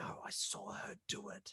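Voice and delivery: drawn-out, very slow, very quiet secretive whisper. Retelling what a boy whispered during a game: imitating a whisper. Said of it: "you could hear him whispering to you".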